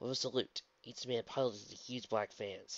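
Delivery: ordinary delivery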